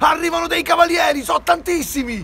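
shouted, high-pitched.

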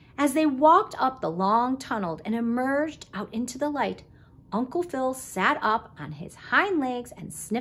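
ordinary delivery

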